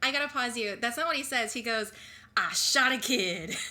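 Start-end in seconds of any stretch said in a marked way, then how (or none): 2.4-3.5 loud, very slow, drawn out, weird inflection. Correcting another speaker's quote by imitating how the cop says it: weird inflection. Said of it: "he puts a weird inflection on it".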